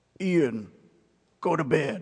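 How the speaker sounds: put-on deepest possible voice, dropped low. Asked by his mother what God said to him, he answers: imitating his deepest voice. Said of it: "he said in his deepest voice".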